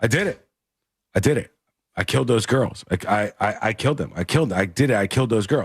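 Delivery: put-on shaky voice. Speaker retells a man's phone call to his wife, imitating a shaking voice. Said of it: "his voice is shaking".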